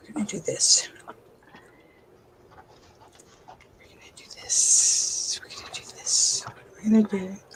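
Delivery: soft whisper muttered under the breath. Talking to yourself while the others on the show listen: whispering. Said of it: "I'm whispering again".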